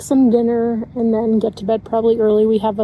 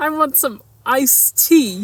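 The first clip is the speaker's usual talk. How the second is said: put-on Long Island accent impression; 3 semitones higher than usual. Playing an accents guessing game, doing one for a partner to guess: Long Island accent. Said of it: "Long Island?".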